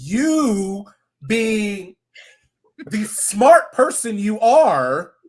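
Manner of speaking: very slow, loud, heavily sarcastic drawl. Criticizing a houseguest's decision to a co-host: sarcastic. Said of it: "I'm being so sarcastic right now".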